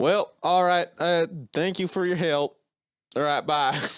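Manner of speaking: put-on high Southern accent. Retelling the end of your phone call with a Southern guy, in a Southern accent. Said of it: "Like I contracted a Southern accent".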